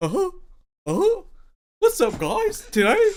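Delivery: squeaky high voice with swinging pitch. Doing a quick influencer intro in a Barney voice. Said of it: "just sound like Barney for a second".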